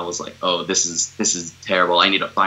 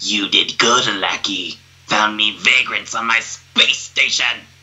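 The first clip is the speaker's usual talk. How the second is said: reptilian lizard alien character voice; 2 semitones higher, 3 dB louder than usual. Asked to do it for the audience, speaker performs a reptilian alien voice. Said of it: "you want me to do that voice".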